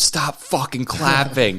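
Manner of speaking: short, high, mild screamed outburst. Retelling how a man in the theater screamed: imitating a man screaming. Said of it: "a dude screamed".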